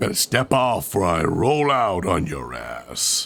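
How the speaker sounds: very low, as deep as possible, swooping robot-hero voice. Streamer joking about how fun it is to talk deep, Optimus Prime voice. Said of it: "speak in a deep voice".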